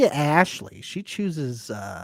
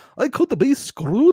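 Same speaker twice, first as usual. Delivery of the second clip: fake Scottish accent, very high, almost Norwegian; 10 semitones higher, 5 dB louder than usual. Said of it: "It's getting more Norwegian almost".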